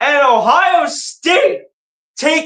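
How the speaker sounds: voice cracking, drawn out. Calling a college football play-by-play, the announcer's voice cracking. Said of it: "Voice crack right there".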